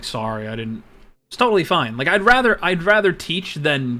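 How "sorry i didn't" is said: very apologetic, small, sorry-sounding voice. Retelling how chat members answered a correction: imitating someone apologizing. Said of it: "has been very apologetic".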